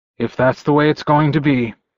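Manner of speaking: plain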